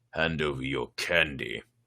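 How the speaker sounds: vicious growl, very low. Narrator reading a story aloud voices Carly Beth's line: vicious snarl. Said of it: "Carly Beth snarled, surprised by the vicious tone in her voice".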